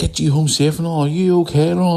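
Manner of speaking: very high-pitched, panicking voice. Retelling mum on FaceTime checking in: imitating mum panicking. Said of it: "And just panicking".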